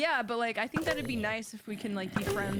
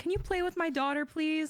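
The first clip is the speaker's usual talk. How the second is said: high, pleading parent voice; 8 semitones higher than usual. Retelling a parent asking a kid at the playground: imitating a parent pleading. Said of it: "when your parent goes up to a kid at the playground and is like".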